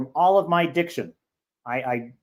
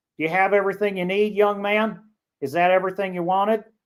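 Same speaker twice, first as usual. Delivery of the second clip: put-on gentle Southern accent; 4 semitones higher than usual. Imitating how people at a northern Florida convenience store talk, Southern accent. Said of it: "I love the way people talk there. They're just like".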